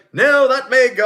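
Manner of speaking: loud, very high-pitched put-on British accent. Imagining running a team, the speaker answers a team member in a sudden British accent. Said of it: "I don't know why I'm British all of a sudden".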